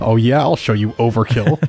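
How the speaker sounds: put-on spiteful, snide, taunting tone. Joking that a unit attacked to spite another player: mock spiteful retort. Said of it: "He did it to spite you. It's like".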